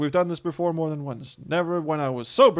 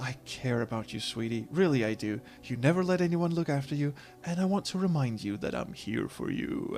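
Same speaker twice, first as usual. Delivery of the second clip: bad attempt at a put-on sultry voice; 2 semitones lower, 7 dB quieter than usual. Voicing a character's dialogue, the speaker tries a sultry voice. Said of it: "I don't know why I put on that voice, but I don't do sultry very well".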